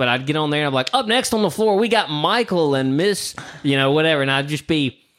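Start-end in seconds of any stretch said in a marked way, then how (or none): 0.9-3.3 pitched-up hardcore shock jock, eighties club DJ announcer. Retelling his wedding reception announcements: imitating his eighties stripper shock jock voice. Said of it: "hitting the hardcore eighties stripper shock jock voice".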